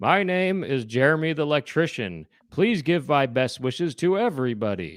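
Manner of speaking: put-on pull-string talking toy voice. Describing what a pull-cord toy says, pull-string talking toy voice. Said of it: "You pull his cord and he goes".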